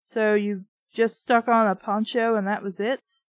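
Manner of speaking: usual speaking voice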